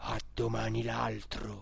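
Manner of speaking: low, grave, solemn voice. The cook, leaving the room, repeats the farewell in a grave voice. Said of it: "ripetendo con voce grave".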